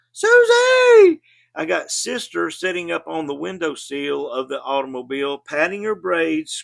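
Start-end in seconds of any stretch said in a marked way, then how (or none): 0.2-1.2 very high, very loud, shrill, stretched-out, drawn-out scream. Retelling how Mama screamed out the car window: imitating a mother screaming. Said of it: "Mama screaming out the window".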